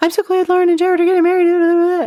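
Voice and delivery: rattled off fast, very high-pitched. Retelling a woman reading fast from her paper, imitating fast high-pitched talking. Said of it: "she was talking really fast".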